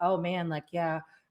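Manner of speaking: mock level, flat, feelingless monotone drone. Speaker imitates someone offering condolences without feeling, imitating a flat monotone. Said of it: "like real monotone".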